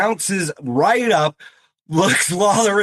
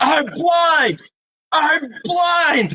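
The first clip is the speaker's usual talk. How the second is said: mock shrill, very high, stretched-out yelling; 10 semitones higher than usual. Retelling a wrestler's entrance, imitating Taz yelling. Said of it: "he's just yelling".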